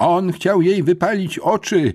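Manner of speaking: worked-up, agitated, high-pitched tirade. Narrator reading a man's accusation during an argument, agitated. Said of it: "powiedział wzburzony pan Witwicki".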